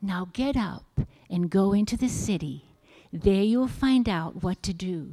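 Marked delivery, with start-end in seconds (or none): none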